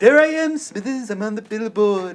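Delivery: very high, shrill, loud cartoon tycoon voice. Retelling the joke made when Perry Johnson's billboard popped up on the drive, Mr. Burns voice. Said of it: "And I was doing a Mr. Burns like".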